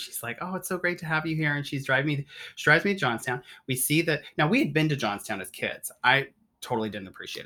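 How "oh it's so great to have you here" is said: put-on laid-on-thick Irish accent, woman's voice, pitched up. Retelling how a woman greeted them off the train: thick Irish accent. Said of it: "She's thick Irish accent".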